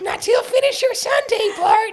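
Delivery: very high, loud, belted cartoon-mom voice. Retelling a Simpsons episode, the speaker quotes Marge: Marge Simpson impression. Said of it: "that was so accurate. Marge is in the room with us".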